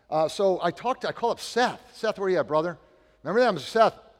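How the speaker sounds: usual speaking voice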